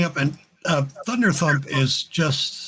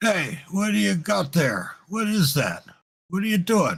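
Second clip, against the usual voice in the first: orc guard voice, challenging tone, pitched up; 4 semitones higher than usual. Voicing an orc guard calling out to the party: orc guard calling out. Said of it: "calls out in Orcish".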